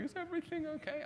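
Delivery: put-on crying, very high-pitched tearful voice. Retelling a worried phone call from mum: imitating someone crying.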